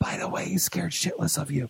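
very quiet, hushed, secretive whisper. Recounting whispering in a man's ear during a handshake: retelling a whisper. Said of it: "I whispered in his ear real quick".

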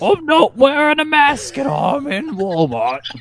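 silly, goofy comic put-on voice. Joking in a put-on bit with the others: Hoggle from Labyrinth voice. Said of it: "You sound like fucking Hoggle from Labyrinth".

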